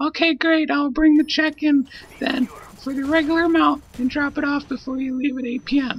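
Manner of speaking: very high, lame put-on woman's voice. Replaying a rent exchange, voicing the person paying rent, in a lame woman voice. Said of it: "ignore my lame woman voice".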